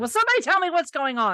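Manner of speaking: screamed, desperate, frantic. Retelling a trailer clip where the Doctor screams: imitating the Doctor screaming. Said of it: "screaming, going".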